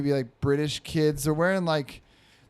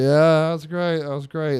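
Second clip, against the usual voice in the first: mock absent-minded, loud, distracted, dismissive half-listening dad voice; 6 dB louder than usual. Retelling a father answering his son without listening: imitating a distracted father. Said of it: "not paying attention".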